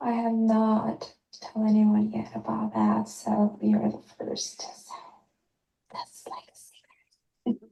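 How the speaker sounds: slow, hushed, secretive little whisper. Leaving a voice message, telling a secret: whispering. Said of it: "Started whispering".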